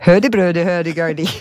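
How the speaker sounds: put-on Swedish-sounding gibberish. Asked whether they speak Swedish, the speaker answers in a Swedish Chef voice. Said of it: "It's the Swedish Chef".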